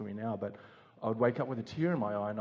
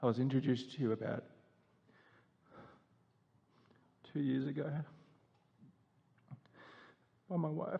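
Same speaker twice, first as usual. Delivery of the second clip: soft voice welling up with tears; 4 semitones higher, 5 dB quieter than usual. Speaking directly to the other person in a conversation, a bit teary. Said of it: "I'm a bit teary".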